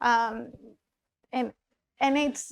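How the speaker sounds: ordinary delivery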